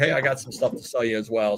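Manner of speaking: ordinary delivery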